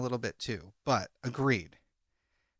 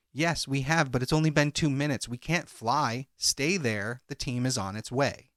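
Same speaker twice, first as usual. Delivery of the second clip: ordinary talk, nothing marked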